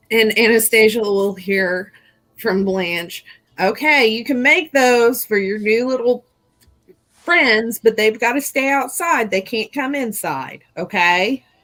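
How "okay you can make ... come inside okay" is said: higher-pitched, motherly voice. Voicing a character who lets the ghouls stay but only outside: mom voice. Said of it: "Got a mom voice going on".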